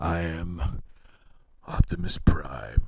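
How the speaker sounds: very low, hushed, soft robot voice. Plugging the iSolo Prime, wishing you could do the real voice, in an attempted Optimus Prime voice. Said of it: "I wish I could do Peter Cullen".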